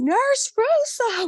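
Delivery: very high, excited scream. Speaker retells a former patient recognizing her decades later in the lobby: Norman screaming her name. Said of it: "He's like screaming my name in the lobby".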